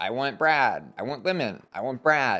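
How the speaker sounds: usual speaking voice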